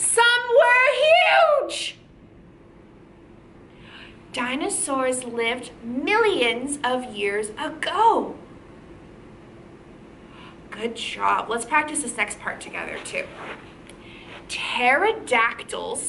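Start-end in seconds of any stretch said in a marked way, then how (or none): 0.0-2.0 high, slow, loud shout. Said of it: "we're gonna be really loud".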